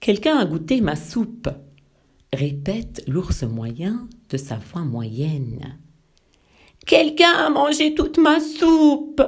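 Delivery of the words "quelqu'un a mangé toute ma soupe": very high, loud tiny bear voice crying out. Reading a children's tale aloud, voicing the little bear crying out in his small voice. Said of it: "crie le petit ours de sa petite voix".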